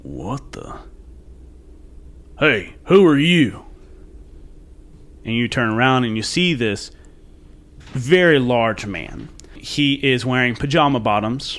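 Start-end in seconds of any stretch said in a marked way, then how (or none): 0.0-3.6 very gruff, rough, gravel-edged voice. Game narrator voicing a very large man who catches the player, very gruff voice. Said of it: "you hear a very gruff voice".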